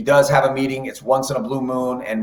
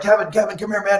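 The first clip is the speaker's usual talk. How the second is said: put-on frantic voice, higher; 8 semitones higher than usual. Retelling the manager rushing over before game time: imitating frantic Francona. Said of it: "it was almost like he was frantic".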